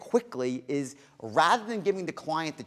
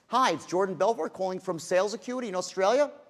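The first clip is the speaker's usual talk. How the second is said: statement ending in a rising, question-like tune; 3 semitones higher than usual. Showing how to phrase a declarative as a question, statement with rising question tune. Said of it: "phrasing a declarative as a question".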